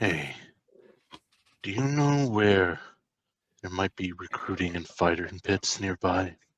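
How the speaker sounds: quiet, hushed, private voice. In a game, leaning close so only the two of them can hear: hushed private voice. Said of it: "so that only the two of us can hear".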